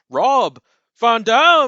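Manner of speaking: over-the-top ring announcer, very high, loud, swooping. Mocking how a game's announcer calls out a wrestler's name: over-the-top ring announcer impression. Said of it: "like very over the top".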